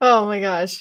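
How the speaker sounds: speaking through laughter. Reacting to a funny story about a strange noise, laughing while talking. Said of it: "I can't stop laughing".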